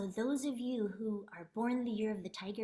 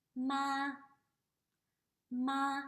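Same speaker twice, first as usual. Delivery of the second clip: ma held level and high, flat tone; 3 semitones higher than usual. Demonstrating the first Mandarin tone on a syllable, high flat tone. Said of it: "It's a high flat tone".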